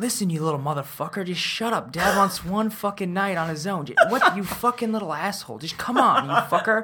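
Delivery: playful, joking delivery. Retelling how a dad jokingly swore at his kid: imitating a dad jokingly swearing at his kid. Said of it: "kidding around, but he's, like, just swearing at his kid".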